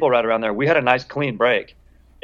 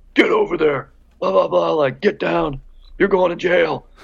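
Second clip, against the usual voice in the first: super intense, high, rough security guard voice; 5 semitones higher than usual. Retelling what a security guy yelled at them: imitating a super intense security guy. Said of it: "that super intense security guy being like".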